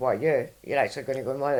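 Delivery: mocking, scornful, savage tone. Retelling how the Monday chatbot reacts to a modelling plan: imitating a mocking chatbot. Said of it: "she just rips you a new one".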